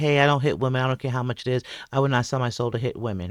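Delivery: earnest, heartfelt conviction and compassion. Replaying how Roland refused the fight: imitating Roland's conviction and compassion. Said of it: "how he said it with, like, conviction and compassion".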